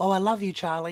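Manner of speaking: fake, offhand yell. Retelling how she called out from the other room, retelling her yell. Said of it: "So she just yells out".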